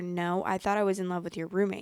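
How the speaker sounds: ordinary delivery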